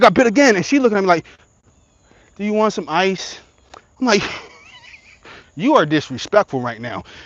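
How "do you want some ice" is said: soft, calm, unbothered, easygoing tone. After getting bitten, the speaker mimics how she asked him, imitating a calm voice. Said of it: "You are too calm for what I'm going through".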